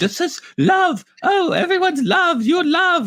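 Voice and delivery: put-on very high swooping voice with slight British accent. Retelling a repeated line from the Heffalump mom: imitating the Heffalump mom, slightly British. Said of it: "Mom comes and does, like, the same thing".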